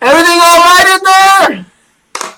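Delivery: very high, loud calling shout. Voicing a character calling in to ask if all is well: shouting. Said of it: "You hear Emerald shouting".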